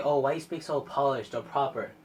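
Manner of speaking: plain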